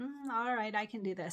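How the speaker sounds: normal talking voice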